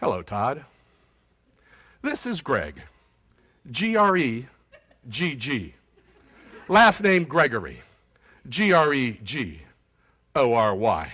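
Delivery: very slow, deliberate, letter-by-letter phone voice. Retelling a voicemail left for a client, imitating own slowed-down speech. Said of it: "I slowed my pace down".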